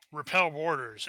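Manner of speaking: plain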